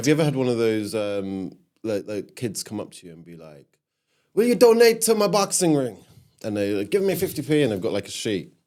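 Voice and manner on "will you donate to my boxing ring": put-on Jamaican accent, pitched very high. Acting out kids asking for charity donations, in an imitated jamaican accent. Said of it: "no one's come up to me in that specific accent".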